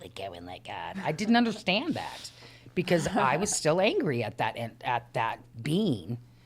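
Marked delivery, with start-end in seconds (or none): 0.0-1.0 very low, very soft, hushed, stupid little voice. Recalling what their own head used to tell them: little stupid voice. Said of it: "in this little stupid voice".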